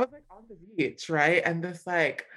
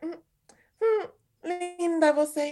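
very high, slow, lingering Portuguese drawl; 11 semitones higher than usual. Retelling what a Brazilian woman said in Portuguese, imitating her way of speaking. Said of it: "But the way she said it was like".

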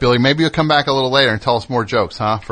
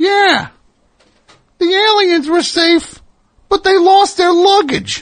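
very high-pitched ventriloquist-dummy puppet voice; 4 dB louder than usual. A ventriloquist's dummy tells an airport joke to the ventriloquist, Billy dummy voice. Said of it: "I have a vape dummy here".

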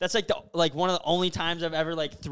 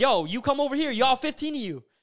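high, challenging, shouted yell; 7 semitones higher than usual. Retelling a standoff with a group across a bush, retelling his own yelling. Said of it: "And I start like yelling at them".

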